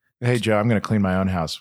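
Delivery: ordinary talk, nothing marked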